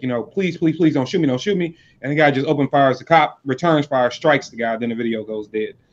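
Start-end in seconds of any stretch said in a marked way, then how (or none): 0.2-1.8 desperate, pleading, begging tone. Retelling how a cop pleaded with a shooter: imitating someone pleading for his life. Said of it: "pleading for his life".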